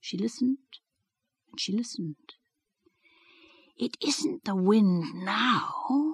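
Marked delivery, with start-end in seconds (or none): 3.8-6.2 forceful loud stage whisper, very drawn out and slow. Narrator reading a character sitting up in bed, listening, in a loud whisper. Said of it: "she said in a loud whisper".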